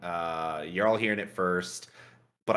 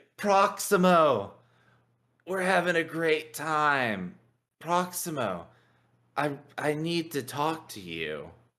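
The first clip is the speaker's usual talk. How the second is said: put-on slow, dragged-out, slurred, sloshed drunk rambling; 7 semitones higher than usual. Voicing a drunk character leaning on a friend: acting very drunk. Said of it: "you can tell I'm totally sloshed".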